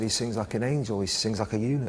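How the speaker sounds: plain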